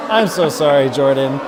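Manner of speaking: very loud speech through laughter. Apologizing to Jordan after a boo, laughing while apologizing. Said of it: "You're you're saying sorry and laughing".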